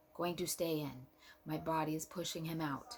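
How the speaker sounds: normal talking voice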